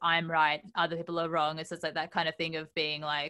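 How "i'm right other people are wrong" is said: plain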